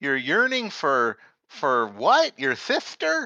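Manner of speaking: confused, hard-of-hearing, high, swooping voice. Voicing a figure behind a door window: acting hard of hearing. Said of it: "He seems a little hard of hearing".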